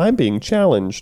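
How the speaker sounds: very high-pitched, dopey put-on kid voice. Quoting a guy's little monologue, in a Ralph Wiggum voice. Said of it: "just like sounding Ralph Wiggum".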